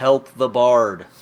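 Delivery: very loud, full-throated battle yell. During a tabletop game, a player's character calls out as a free action, yelling. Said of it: "I'm going to yell".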